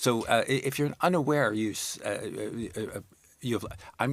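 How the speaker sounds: halting, stumbling, stammering speech. Reacting to a story about someone unaware of the forest fires, stammering. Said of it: "you know why I'm stammering?".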